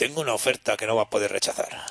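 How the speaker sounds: low, soft, raspy voice. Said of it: "tiene la voz así rasposa que parece Don Corleone".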